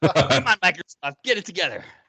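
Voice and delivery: high, laughing put-on voice.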